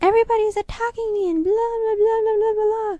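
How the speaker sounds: high-pitched whiny put-on voice. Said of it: "And then she's like".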